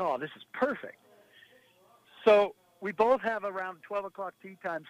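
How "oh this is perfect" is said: normal talking voice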